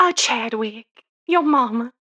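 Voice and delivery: broad, exaggerated, slow, thick Southern drawl. Retelling a film scene, imitating Angela Lansbury: thick Southern accent. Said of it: "Angela Lansbury has a thick Southern accent".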